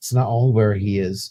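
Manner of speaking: hushed, hush-hush, secretive voice. Imitating the neighbor talking about the devil: imitating a hushed voice. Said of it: "she's complete hush hush".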